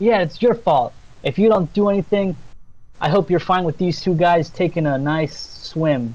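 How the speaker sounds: furious, angry screaming. Voicing a nymph who blames a lumberjack for what happens: screaming angrily. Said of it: "screaming at him like".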